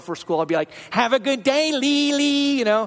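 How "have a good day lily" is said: very slow, high, drawn-out goofy voice. A father dropping his daughter off at school, in a funny voice. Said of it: "I use kind of a funny voice".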